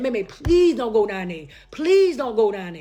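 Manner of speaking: put-on begging, pleading voice. Retelling how a sister begged on the phone: imitating a sister begging. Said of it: "Misha begged me".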